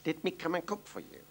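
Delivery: ordinary delivery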